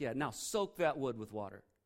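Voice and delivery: brash, swaggering, cocky and confident delivery. Retelling a prophet ordering the altar wood soaked: imitating cocky confidence. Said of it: "We're getting borderline cocky here".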